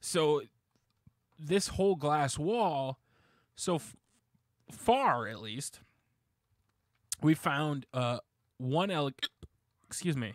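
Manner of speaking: hiccuping and burping. Describing a glass wall in a space they're working on, hiccuping. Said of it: "I'm burping, hiccuping".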